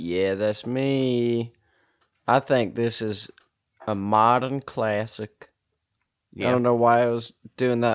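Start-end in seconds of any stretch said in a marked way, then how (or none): 0.0-5.5 slow, syrupy Southern drawl, "me" stretched long. Reading out a 9.0 rating, in a syrupy southern drawl. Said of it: "doing it in that syrupy southern drawl".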